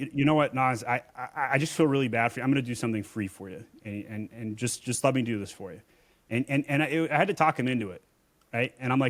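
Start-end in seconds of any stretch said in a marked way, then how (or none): none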